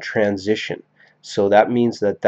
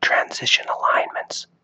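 whispered, quieter. Naming the lesson topic before stopping: whispering. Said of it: "I'll stop whispering".

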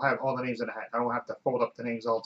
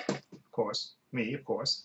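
ordinary talk, nothing marked

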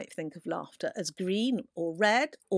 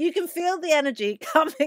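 talking through laughter, pitched up; 7 semitones higher, 4 dB louder than usual. Showing viewers a mood booster, the speaker talks while laughing. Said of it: "I've got to stop laughing now".

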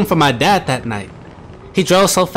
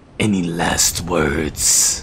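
very low, deep growl; 12 semitones lower, 4 dB quieter than usual. Narrator reads a voice from the dark driver's seat speaking to him, growling voice. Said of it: "It growled".

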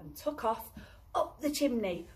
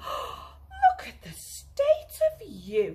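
breathless gasp, very high, very slow, drawn out. Mrs. Bear sees Baby Bear land on the carpet from the chimney, gasping. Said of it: "said [name]. / she gasped as she led him away to the bathroom".

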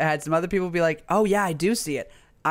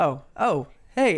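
put-on disappointed teenage boy voice. Retelling boys opening the door, imitating disappointed teenage boys. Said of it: "The amount of disappointment in their voice".

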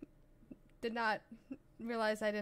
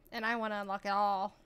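usual speaking voice

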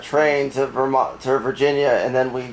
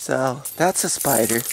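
normal talking voice

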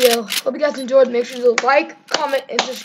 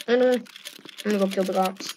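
normal talking voice

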